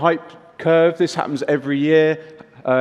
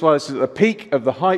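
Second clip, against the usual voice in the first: usual speaking voice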